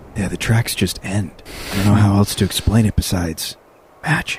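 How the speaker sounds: hushed whisper. A player in a tabletop game speaks to the party, whispering. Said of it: "or I'm whispering".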